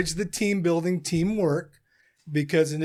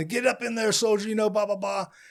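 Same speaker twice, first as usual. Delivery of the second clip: put-on light, mild drill-sergeant holler, pitched up; 4 semitones higher than usual. Retelling arrival at basic training: imitating drill sergeants yelling. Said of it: "they're just yelling".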